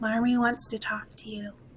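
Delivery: close, soft, secretive half-whisper. A game narrator voices a character who leans in, half-whispering in someone's ear. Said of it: "she whispers in your ear".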